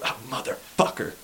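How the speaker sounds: high, frustrated outburst.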